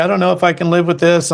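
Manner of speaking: acted tearful, crying voice. Retelling his girlfriend's reaction to his business: imitating Carla crying. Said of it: "she's, like, crying".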